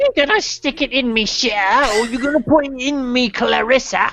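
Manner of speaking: put-on British accent. Acting out a Family Guy skit of British people flirting, in a mock British accent. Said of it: "like British people trying to turn each other on".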